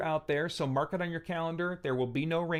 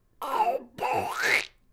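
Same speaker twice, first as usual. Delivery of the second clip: badly done, squawking cartoon duck voice; 8 semitones higher, 3 dB louder than usual. Trying mom's line again in a terrible Donald Duck voice. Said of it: "I have a terrible Donald Duck".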